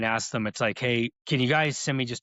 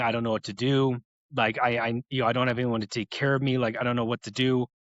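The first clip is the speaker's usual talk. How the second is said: mock-tearful, crying, pleading voice. Recounting his mom calling him after being hurt again; imitating someone crying. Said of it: "my mom called me crying".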